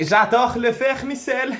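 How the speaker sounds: put-on German accent. Asked to repeat the phrase with a German accent, German accent. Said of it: "Dis-le avec l'accent allemand".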